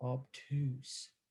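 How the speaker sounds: big, heavy-sounding, deep, low voice. Teaching angle names with different voices: deep voice on 'obtuse'. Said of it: "You say it with a deep voice".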